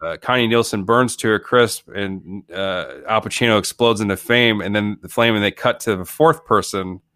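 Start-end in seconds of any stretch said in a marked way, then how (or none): none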